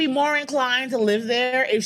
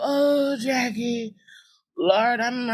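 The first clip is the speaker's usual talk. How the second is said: mock sad, woeful, mournful voice, very slow. Retelling the phone call from an aunt: imitating aunt's sad-sounding voice. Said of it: "She always has this voice of".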